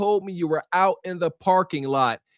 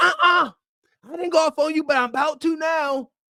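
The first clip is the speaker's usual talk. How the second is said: furious, enraged, pitched up; 8 semitones higher than usual. Retelling what a woman in a clip said: imitating an enraged woman. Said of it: "Why is she so enraged?".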